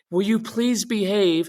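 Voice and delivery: high-pitched, begging, pleading voice. Showing parents an approach to a strong-willed child that fails: demonstrating pleading. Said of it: "Instead of trying to do this".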